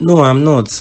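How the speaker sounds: cross, sharp-tempered, angry tone. In a drama, a man refuses to go inside when asked, angry. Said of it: "Why do you sound angry?".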